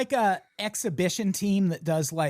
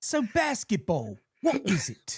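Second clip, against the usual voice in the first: mock British accent, higher; 3 semitones higher than usual. Parodying UK interviewers questioning the Harlem Globetrotters: put-on British accent. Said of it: "your British accent's better than mine".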